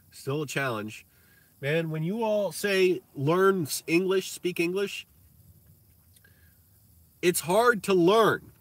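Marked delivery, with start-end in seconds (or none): 1.6-8.3 loud, high yelling with words stretched out. Talking to viewers who are watching, yelling. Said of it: "I'm yelling again".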